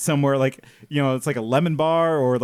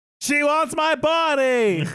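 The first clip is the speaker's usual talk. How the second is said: put-on terrified scream, higher; 12 semitones higher than usual. Retelling a scene where a boy is dragged into a bathroom: imitating Axe screaming in terror. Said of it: "he screams".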